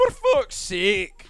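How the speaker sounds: high Scottish accent. Showing how Scottish speakers end a sentence: Scottish accent. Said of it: "like, Scottish, you just go".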